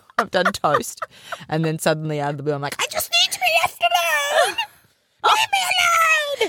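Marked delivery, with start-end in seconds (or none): 2.8-6.5 very high, grumpy, cranky queen voice. Recalling what she says after demanding things, put-on Grumpy Queen voice. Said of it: "I have to use my Grumpy Queen voice".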